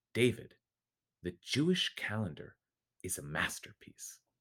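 soft, solemn, serious, sincere, heartfelt, acted. Recalling the moment a man looked at him and said it, retelling a serious, heartfelt remark. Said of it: "in a very serious, heartfelt tone".

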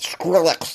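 speech like mouth stuffed. Struggling with a hard name, saying it like a mouthful of cornbread. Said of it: "Gotta say it like I got a mouthful of cornbread".

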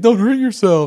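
shrill, very high, loud gym-teacher voice. Mocking how Grayson sounds, imitating Grayson as gym teacher. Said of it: "Grayson sounds like that gym teacher. He's like".

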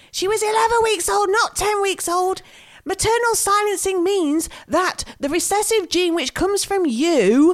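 loud, screamed yelling. Speaker recalling what she screamed at her phone in bed: retelling screaming at phone. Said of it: "I was sat in bed screaming at my phone because I was like".

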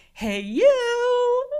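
very high-pitched, loud, creepy, friendly tone. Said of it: "she goes".

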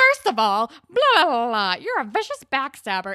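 put-on very loud, shrill, condescending, swooping tone. Retelling a scene where Rick talks down to Paige: imitating Rick's condescending tone. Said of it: "being so condescending and talking down to Paige".

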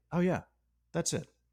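deadpan delivery.

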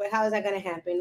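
normal talking voice

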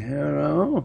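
put-on slow, high elderly voice. Answering a telemarketer's call, in a slow put-on old person voice. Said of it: "Can we hear your old person telemarketer voice? ... I'm just like".

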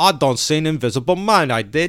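put-on loud Cockney accent. Chatting about movie actors' accents, doing the actor: Michael Caine Cockney impression. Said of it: "he's got a real Cockney accent".

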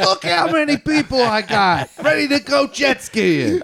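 high-pitched yell. Retelling haggling with the jet ski man: imitating a yell at Matt. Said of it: "yelling at Matt voice".

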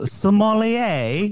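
pronunciation in a British accent. Asked to say sommelier in a British accent. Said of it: "can you say sommelier in a British accent?".

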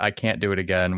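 plain

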